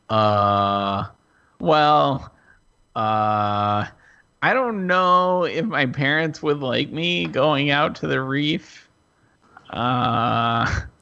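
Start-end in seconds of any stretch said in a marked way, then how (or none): none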